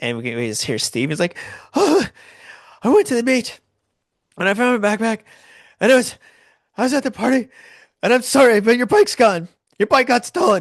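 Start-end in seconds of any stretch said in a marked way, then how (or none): 1.7-10.6 put-on panic, very high, loud, breathless gasping. Retelling a friend's phone call: imitating panicked breathless speech. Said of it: "panic breathing on the other end".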